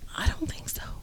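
soft, unvoiced whisper under the breath.

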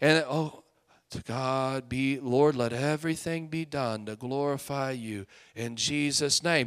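very low, very quiet, weak, feeble praying voice. Retelling a man's prayer at the kids' football game, mocking a wimpy, weak prayer. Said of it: "the most religious, wimpy, weak prayer".

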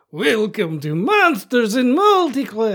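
swooping, very high, very loud, shrill put-on vampire voice. Introducing a special spooky episode of monsters and multiclass, in a vampire voice. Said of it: "Do it in a vampire voice".

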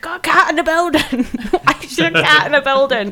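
acted, high-pitched, scolding shout. Retelling how a teacher shouted about a cat in school: imitating a teacher shouting. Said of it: "the head teacher was shouting at me".

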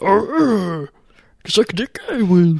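bad, high-pitched put-on character voice. Trying out a Yoda voice being practiced: bad Yoda voice. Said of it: "trying to practice Yoda a little bit".

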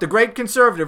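ordinary talk

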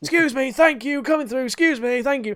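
mock very high, insistent, repeated screaming. Speaker retells charging through a crowd carrying beer, retelling a scream. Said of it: "because I'm screaming that as I'm going".

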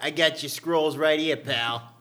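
put-on Philadelphia accent. Friends taking turns at accents, this attempt landing as a Philly accent. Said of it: "now you're in Philly".

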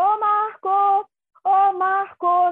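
play-acted, very slow, loud, drawn-out shout. Calling a man's name among apartment buildings late at night, retelling a loud shout. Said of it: "eu comecei a gritar o nome dele".

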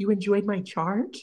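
put-on, tearful crying voice. Retelling a reality-show scene where a housewife starts crying: imitating someone crying. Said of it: "starts crying, and she's like".

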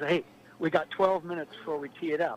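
ordinary talk, nothing marked

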